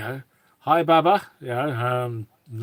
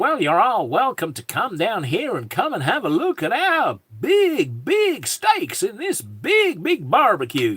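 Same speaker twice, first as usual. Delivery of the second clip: fake American accent, sing-song, swooping and high; 9 semitones higher, 4 dB louder than usual. Asked to do an American accent, speaker gives it a try: put-on American accent. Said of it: "do an American accent".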